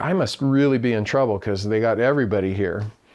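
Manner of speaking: ordinary talk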